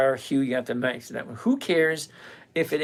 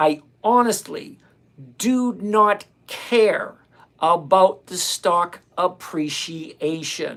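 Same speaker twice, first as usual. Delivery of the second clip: slow, deliberate enunciation, higher and louder; 3 semitones higher, 5 dB louder than usual. Answering a commenter's objection: slow, enunciating every word. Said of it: "I'm gonna say this slowly, and I'm gonna enunciate every single word".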